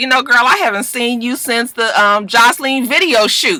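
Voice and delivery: ordinary delivery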